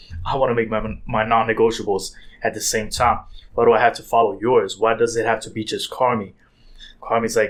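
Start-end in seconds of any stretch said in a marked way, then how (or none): none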